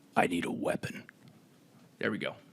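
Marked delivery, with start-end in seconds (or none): 0.1-1.0 hushed, breathy character voice. Doing an impression of Master Chief, in a Master Chief voice. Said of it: "my impression of Master Chief".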